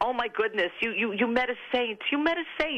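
put-on New Jersey accent. Retelling what your mother said when you came home, in a new jersey accent. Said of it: "she said in New Jersey accent".

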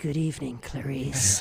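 very low, deep voice. Retelling how a crowd answered the name Clarice: Hannibal Lecter voice. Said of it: "everybody turned into Hannibal Lecter and went".

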